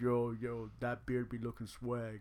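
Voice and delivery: put-on low, deep voice. Acting out an anonymous masked person's comment in a put-on deep voice. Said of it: "deep voice".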